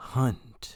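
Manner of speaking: hushed, whispering voice on a single word. Retelling a dream where a lady on the phone speaks: imitating a whispery tone. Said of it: "very whispery tone".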